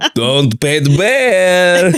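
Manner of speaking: put-on Polish accent. Narrating a comic bear story in conversation, in a put-on polish accent. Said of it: "I don't think I could do a Polish accent".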